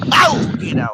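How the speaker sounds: very loud shout. While fishing by a road, the speaker yells at something that bites: yelling. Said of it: "Sorry to yell, y'all".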